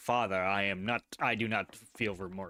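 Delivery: defiant, unrepentant cat voice, talking back. Voicing the cat looking up after being thrown: voicing the cat Amadeus. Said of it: "As he looks up to me like".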